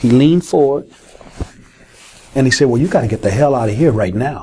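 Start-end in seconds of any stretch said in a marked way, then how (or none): 2.7-4.4 subtle, kind, fatherly understated tone. Retelling what the president said after leaning forward: imitating a quiet, fatherly tone. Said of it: "subtle, quiet, kind, fatherly way".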